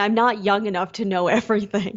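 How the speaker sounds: normal talking voice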